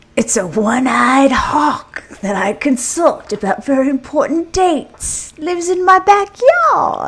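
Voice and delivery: fake Australian accent. Asked what an oracle is, the speaker answers in a pseudo Australian accent. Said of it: "did you just slide into a pseudo Australian accent".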